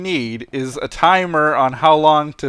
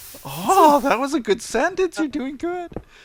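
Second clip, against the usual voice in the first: very high-pitched put-on play voice; 12 semitones higher than usual. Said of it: "I don't even need to try for this high pitched voice".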